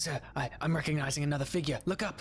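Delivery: very alarmed, urgent whisper close to ear. Voicing a character whispering a warning in someone's ear: very alerted whisper. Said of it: "you hear just this very alerted".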